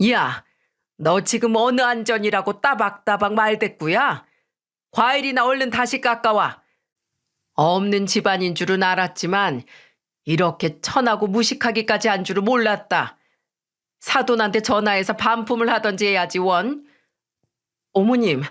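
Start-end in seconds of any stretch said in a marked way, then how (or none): 0.1-16.9 put-on, very angry, furious-sounding voice. Retelling a mother-in-law scolding the speaker's daughter, imitating a very angry voice. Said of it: "잔뜩 성이 난 목소리로".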